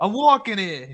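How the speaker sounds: put-on New York accent. Suggesting what to say when kids bump into you, New York accent. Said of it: "how's how's your New York accent?".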